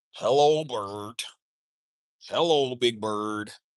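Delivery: deep, very slow, low dragged-out drawl. Imitating a Muppet greeting a friend: Snuffleupagus voice. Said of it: "Snuffleupagus. That's who you remind me of".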